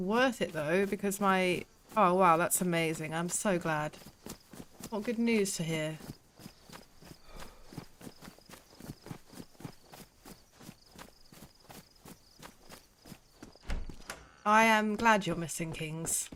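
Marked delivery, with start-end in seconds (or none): 2.0-16.3 kind words that sound disingenuous, accidentally sarcastic. Replying to someone's news, sounding unintentionally sarcastic. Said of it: "That sounds disingenuous. ... Why do I always sound sarcastic when I say nice things?".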